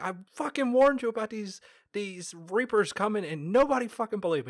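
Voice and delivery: shrill, furious, fast, high-pitched outburst. Acting out Shepard walking in on the council: imitating Shepard, mock-angry. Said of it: "Like you felt like he was pissed".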